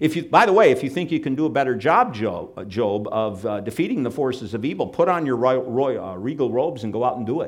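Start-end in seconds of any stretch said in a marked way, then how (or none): none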